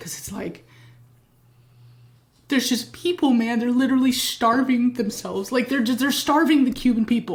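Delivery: voice strained, trying not to cry. Speaking to the audience about Cuba, holding back tears. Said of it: "I'm trying not to cry even as I talk to you about it".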